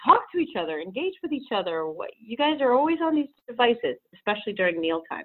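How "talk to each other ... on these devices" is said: mock fed-up, exasperated parental scolding tone. Retelling what gets said to the children at breakfast: imitating own yelling. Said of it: "I'm yelling at them every morning".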